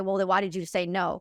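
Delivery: ordinary delivery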